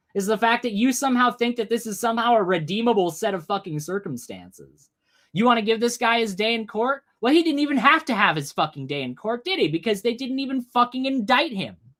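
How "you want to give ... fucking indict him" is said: furious, fed-up, pissed-off angry ranting. Answering someone in the side chat who defends the accused: pissed off. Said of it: "That's pissing me the fuck off right now".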